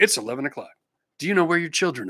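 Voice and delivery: hushed, late-night TV announcer voice. Recalling an 11 o'clock TV announcement from childhood, doing a TV announcer impression. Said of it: "The announcer would always go".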